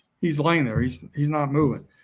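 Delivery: ordinary delivery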